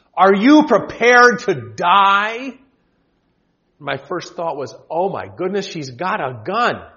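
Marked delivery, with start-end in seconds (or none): 0.2-2.6 loud, slow menacing shout with "die" drawn out. Recounting a train ride, the speaker quotes a woman by the door, retelling a threatening shout. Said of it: "shouted in a threatening voice".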